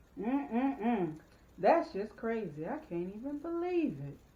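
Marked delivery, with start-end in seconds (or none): 1.6-4.1 mock shock, sing-song, plainly sarcastic disbelief. Trying out a line to see if the listener catches the tone: sarcastic disbelief. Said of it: "sarcasm, I caught it".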